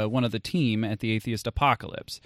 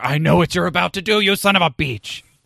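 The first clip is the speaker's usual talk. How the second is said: angry raised voice, pitched up high; 6 semitones higher, 7 dB louder than usual. Voicing an angry guy during play: angry guy voice like Fez. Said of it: "my angry guy right there sounded like Fez from That Seventies Show".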